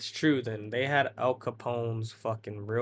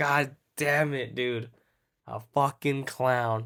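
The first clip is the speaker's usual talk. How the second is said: mock angry, slow, furious swearing outburst; 2 semitones higher, 4 dB louder than usual. Retelling seeing a clown that scared them: retelling own angry outburst. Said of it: "I was so fucking mad 'cause I was like".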